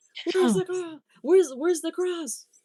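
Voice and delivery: acted escalating anger, very high, shrill, stumbling. Retelling a caller's repeated demand for the cross: imitating someone getting angry. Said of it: "progressively more angry".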